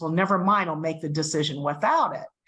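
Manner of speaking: very rough, harsh, gruff, upset voice. Retelling how Doctor Lee answered: imitating a gruff voice. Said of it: "Doctor Lee's voice goes really gruff".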